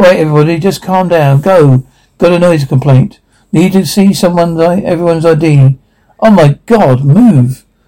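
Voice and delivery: ordinary talk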